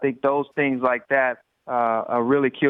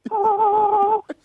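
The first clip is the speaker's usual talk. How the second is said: high, loud angelic choir-like ah. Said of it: "with the sound of".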